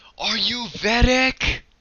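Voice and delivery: put-on very high yell, calling across a distance. Retelling how a man far away spotted someone and called out, retelling a yell. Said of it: "and then he yells".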